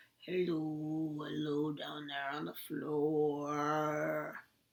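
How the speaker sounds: very low, deep voice with "floor" drawn out. Leading a group through a hello rhyme, saying hello as low as possible. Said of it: "Let's say hello as low as we can".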